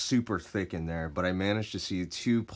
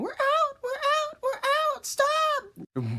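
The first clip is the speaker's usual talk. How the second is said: mock sobbing, wailing, very high, drawn-out crying scream; 4 dB louder than usual. Retelling being shot with paintballs from behind: imitating screaming and crying. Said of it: "screaming and crying".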